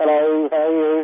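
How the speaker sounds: muffled voice, like head in a bucket. Answering a caller's greeting on a bad phone line: muffled, like head in a bucket. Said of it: "Sounds like you're talking with your head in a bucket".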